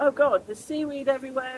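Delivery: normal talking voice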